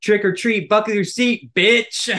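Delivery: very loud, high-pitched, all-out yell. Reading a flashing road sign aloud in the car: Trevor Wallace voice. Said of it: "Why did you sound like Trevor Wallace saying that?".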